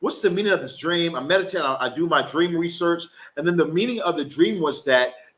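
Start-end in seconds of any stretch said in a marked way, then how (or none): none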